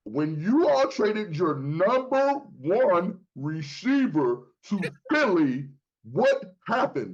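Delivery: slowed-down, deliberate, spelled-out delivery, each point stressed. Repeating a point in an argument to the others: saying it slower. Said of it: "I'm gonna say it slower".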